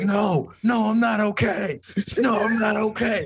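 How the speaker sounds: mock very slow, high, dragged-out yelling scream. Retelling a crash, imitating the fallen bike rider screaming he's not okay. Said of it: "Literally screaming, yelling".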